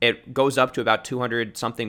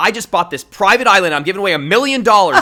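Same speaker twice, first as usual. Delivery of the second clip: very loud, punchy influencer hype, every word popping; 8 semitones higher, 11 dB louder than usual. Showing how the entertainment influencer accent sounds: every word really popping. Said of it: "making, like, every word really pop".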